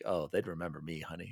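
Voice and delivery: put-on teasing, playful joking delivery. Retelling a line once suggested for a limo introduction: retelling own joking line. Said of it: "one was joking around".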